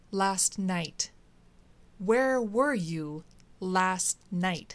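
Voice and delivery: each word stressed hard, word by word. Not getting the answer he wants, he presses her again, emphasizing each word. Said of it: "emphasizing each word".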